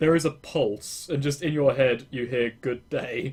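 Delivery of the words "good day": flat monotone robotic voice, lower. Voicing a scrap metal construct answering a greeting: monotone computer voice. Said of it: "it's not formal, it's just monotone".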